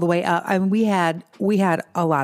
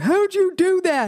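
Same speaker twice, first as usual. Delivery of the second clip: put-on, very high, drawn-out yell; 13 semitones higher than usual. Retelling a husband's reaction to losing a motorcycle race; retelling husband's yell. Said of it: "he just was yelling".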